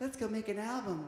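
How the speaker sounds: high-pitched voice. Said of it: "Here's my high voice".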